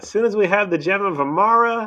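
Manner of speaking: yelling, high and loud. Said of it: "[name] being [name] just yells out".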